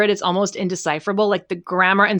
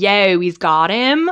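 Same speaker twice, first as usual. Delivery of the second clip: put-on deep, slow Philadelphia accent. Recalling a story with a co-host, quoting it: deep Philly accent. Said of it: "in like a deep Philly accent".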